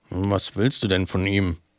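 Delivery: mumbling with full mouth. A character holding a waffle answers another: mumbling with full mouth. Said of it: "murmelte mit vollem Mund".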